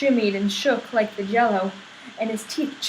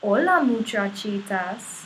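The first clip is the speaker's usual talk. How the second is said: very softly spoken. Narrator reading the kitty boy's greeting to everyone, in a very soft voice. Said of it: "he said in a muy muy soft voice".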